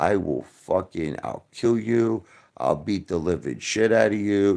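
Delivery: acted-out screaming. Speaker quoting what a man screamed on the phone: retelling a screamed threat. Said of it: "screaming like at the top of his lungs".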